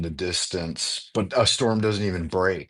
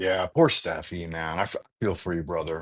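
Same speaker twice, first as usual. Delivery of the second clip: ordinary delivery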